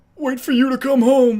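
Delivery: rough, high cartoon-style voice. Asked to do impressions, the speaker tries a rough Patrick Star impression. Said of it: "I can kind of do Patrick".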